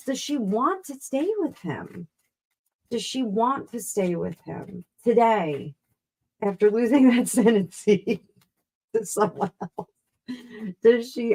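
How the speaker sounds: talking through laughter, laughing mid-sentence. Commenting while trying to stay positive, laughing while talking. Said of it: "I'm sorry, I'm laughing".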